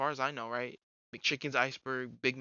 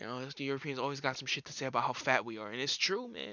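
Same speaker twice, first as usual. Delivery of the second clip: ordinary delivery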